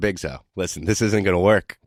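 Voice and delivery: ordinary delivery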